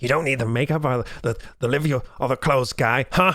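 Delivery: angry put-on voice. Reading out a second wall of anger in text form: imitating the husband's angry texts. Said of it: "I'm trying to do an, an impression here".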